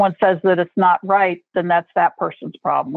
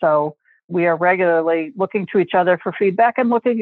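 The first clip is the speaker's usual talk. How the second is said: usual speaking voice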